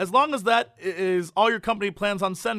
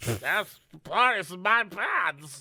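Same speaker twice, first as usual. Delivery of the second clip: put-on slow, drawn-out, plastered drunk talk. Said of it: "I'm so drunk right now".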